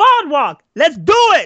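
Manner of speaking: very high, swooping, yelled delivery. Retelling ordering everyone to get to work: imitating his own yelling. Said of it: "I don't know who he's screaming at".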